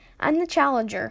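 plain

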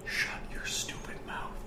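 soft, slow, hissed whisper.

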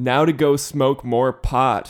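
grand, loud, slow announcer-style delivery. Retelling announcing something to a group in a parking lot: retelling a loud announcement. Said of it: "loudly announced".

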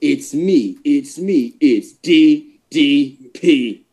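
very slow, drawn-out delivery, each word dragged. Showing how the other should have said it: imitating DDP's intro. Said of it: "I wanted you to go".

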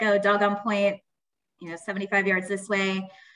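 ordinary delivery

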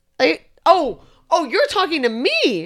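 high, loud, startled, surprised blurt.

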